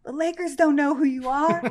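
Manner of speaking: disbelieving, outraged screaming. Retelling a dad's reaction to postponing treatment: imitating a dad screaming. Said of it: "he's screaming".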